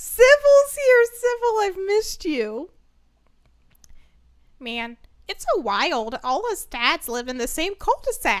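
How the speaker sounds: loud silly voice with big swooping pitch swings. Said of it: "What did he sound like?".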